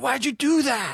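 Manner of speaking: very high, angry dad voice, scolding tone. Retelling how a dad got mad at the hurt kids: imitating a dad getting mad. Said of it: "he would get mad with us".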